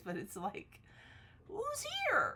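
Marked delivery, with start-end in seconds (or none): 1.5-2.4 put-on very high, loud, shrill girly barking call. Describing the dog becoming a guard dog, doing Susie's girly bark voice. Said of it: "it's a girly voice".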